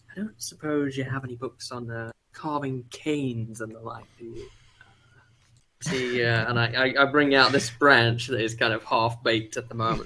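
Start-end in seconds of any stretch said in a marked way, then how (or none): 0.1-4.4 hushed, fairly quiet, confidential tone. Asking the bookstore person across the table, out of earshot: said fairly quietly. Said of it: "kinda say it fairly quietly".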